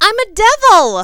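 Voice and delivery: bright, chipper, very high-pitched and very loud. Narrated story, the speaker answers a question about their costume: chipper voice. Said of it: "I declared in my most chipper voice".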